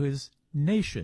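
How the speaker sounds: stress on the word his. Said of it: "underline the word his".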